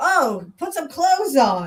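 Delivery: slow, attempted put-on English accent. Retelling a comedy skit about settlers: attempted English accent, imitating Eddie Izzard. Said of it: "I can't do the English accent".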